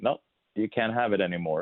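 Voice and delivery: ordinary delivery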